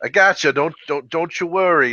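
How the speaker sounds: reassuring, put-on Brooklyn accent. Quoting a character from an elevator scene: deeper Brooklyn accent. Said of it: "he's got like this like kind of deeper like Brooklyn accent almost".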